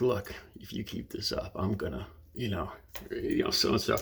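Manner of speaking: soft, close, menacing one-on-one whisper. Showing how to warn someone up close in an argument: whispering a threat. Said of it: "you kinda whisper, you're like".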